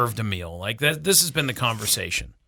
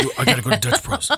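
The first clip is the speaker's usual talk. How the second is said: mock whispery talk, higher pitch; 7 semitones higher than usual. Imitating how a daughter talks when ordering: imitating someone's whispery voice. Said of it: "She's very whispery".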